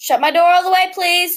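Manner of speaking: loud, high yelling. Calling out to another person at home, yelling. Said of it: "Sorry, I'm yelling".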